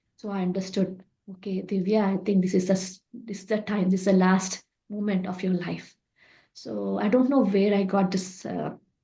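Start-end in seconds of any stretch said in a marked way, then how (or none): none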